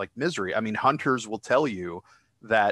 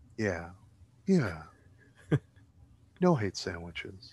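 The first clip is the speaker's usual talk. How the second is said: slow, unhurried, drawn-out voice; 3 semitones lower, 4 dB quieter than usual. Repeating the show's takeaway in an imitation: Jackson voice. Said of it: "That's my Jackson voice".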